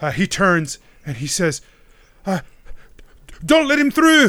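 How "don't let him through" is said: terrified, very high-pitched, loud, fear-shaken cry. Voicing a character shaking with fear, ordering others to block the way: frightened, shaking with fear. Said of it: "Donald is shaking with fear across from you".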